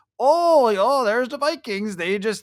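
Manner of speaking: put-on northern Minnesota accent. Mimicking skeptical Vikings fans, the speaker slips into a northern Minnesota accent. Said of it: "I just went into like a northern Minnesota accent".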